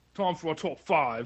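mock Cockney accent. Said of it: "Can you intro it with that British accent".

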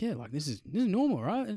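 agitated, wound-up outburst, pitched high. Retelling what a policewoman said about a report: imitating a worked-up policewoman. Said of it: "she's also getting pretty worked up".

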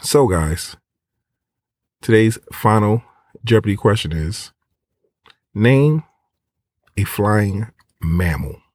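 deliberately slow delivery. Game host repeats the final Jeopardy question for the guys: slowed-down speech. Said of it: "Let me slow it down".

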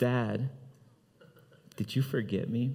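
imitated shaky pleading. Retelling a phone call from a strange number calling him Dad, imitating a trembling voice. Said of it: "I hear this trembling voice".

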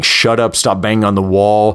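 ordinary delivery

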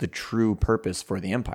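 ordinary talk

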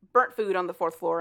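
ordinary delivery

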